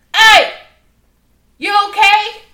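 very loud, shrill, high shout. Retelling how he went outside and called out to her, a loud shout. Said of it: "That's so loud".

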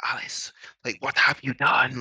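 loud, hoarse, dry, creepy, angry-sounding rasp. Describing a voice questioning Alice, imitating a raspy voice. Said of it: "this really raspy voice".

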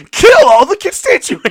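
very loud, high-pitched exclaiming cry. Joining in imitating him reacting to a movie: imitating an acquaintance exclaiming. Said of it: "And he's just".

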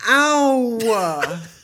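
put-on shrill, very loud, very high, drawn-out childish yelp. Retelling being hit in the face by a ping pong ball, imitating own prepubescent voice.

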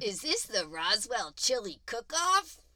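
slow, loud goofy uncle voice. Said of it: "He goes".

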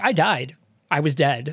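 plain

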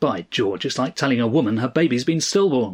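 plain

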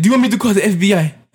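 bad put-on Russian accent. Speaker retells what a woman said to him during a test, in a put-on Russian accent. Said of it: "she had a Russian accent too".

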